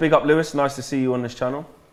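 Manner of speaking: ordinary talk, nothing marked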